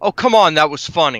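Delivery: loud, sulky, put-out complaining tone. Player acting out their character's reply to the others, sulky. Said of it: "sulk almost".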